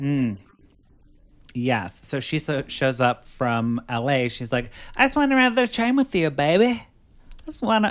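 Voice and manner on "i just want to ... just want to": very high, put-on country accent. Retelling what the girlfriend said when she showed up from L A, put-on country accent. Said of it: "I'm doing a country accent for her".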